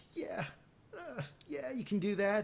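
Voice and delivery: timid, shy, hesitant, very high-pitched voice. Imitating him answering interview questions: imitating a shy answer. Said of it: "he kinda just, like, shyly answered it".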